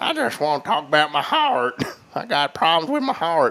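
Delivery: talking out the side of the lip. Imitating what an uncle used to say about his heart: imitating an uncle. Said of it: "starting to sound like my uncle".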